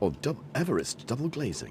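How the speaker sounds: soft-spoken advert voiceover. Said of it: "My advert voice".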